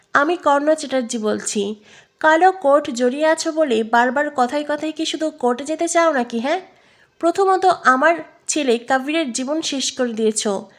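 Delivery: ordinary delivery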